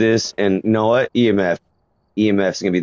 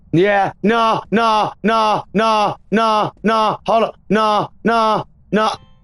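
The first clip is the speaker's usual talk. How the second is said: frightened and breathless, higher pitch; 12 semitones higher than usual. Reacting after the camera reports a thrown object: scared and out of breath. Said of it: "I'm already out of breath! I'm so scared!".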